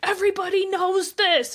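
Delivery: furious, shrill, loud screamed outburst. Speaker retells a man screaming at a woman, retelling him screaming. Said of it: "he's screaming at her like".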